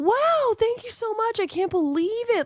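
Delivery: very high, shrill, hysterical gush. Show a much smaller creator how not to respond, in a hysterical tone. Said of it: "hysterical tone".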